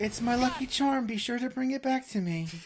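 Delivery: emotional character voice. Performing Kairi's line while discussing how it should sound: emotional Kairi line, a bit loud. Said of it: "it's super, like, emotional, and there's a bit of loudness to it".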